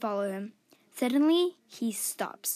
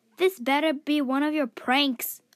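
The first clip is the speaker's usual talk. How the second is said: annoyed, irritated yell, raised voice; 3 semitones higher, 3 dB louder than usual. Reading a story where the narrator calls into the trees: annoyed yell. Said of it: "I yell into the trees, very annoyed".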